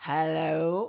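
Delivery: deep put-on voice. Retelling greeting people after riding up on a Harley: deep put-on voice. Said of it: "in his, like, deep voice".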